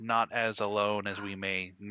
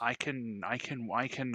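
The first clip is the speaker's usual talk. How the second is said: stuttering and stammering, higher pitch, slower pace; 3 semitones higher than usual. Describing what their character can wear and wield, stuttering. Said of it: "I'm stuttering a lot".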